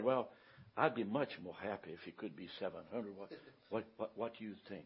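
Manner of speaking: put-on gentle voice. Retelling how a man answered during a price negotiation, imitating a gentle voice. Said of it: "In a gentle voice, he said".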